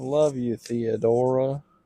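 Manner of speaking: bad put-on Louisiana accent. Asked for last words, repeating the corrected line in a bad Louisiana accent. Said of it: "That was my Louisiana Sona".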